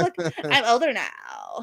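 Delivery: put-on swooping, drawn-out Valley Girl voice. Retelling own toddler words after copying Valley Girl talk: imitating Valley Girl talk. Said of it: "trying to talk like the Valley Girl".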